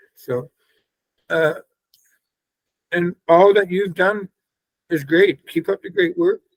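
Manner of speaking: crying through the words, tearful, halting, voice breaking. Thanking someone for their work against bullying, crying while talking. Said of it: "And I'm sorry I'm crying".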